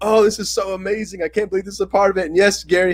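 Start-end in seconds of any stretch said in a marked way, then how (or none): 0.0-2.2 over-the-top gushing amazement, laid on thick, pitched high. Retelling how the theater reacted to the ending: imitating an exaggerated gushing reaction. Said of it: "I'm laying it on thick".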